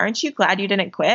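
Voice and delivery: whispered voice. Retelling what someone whispered in their ear at nationals, retelling a whisper. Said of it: "Greg just like whispers in my ear".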